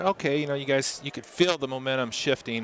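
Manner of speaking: ordinary talk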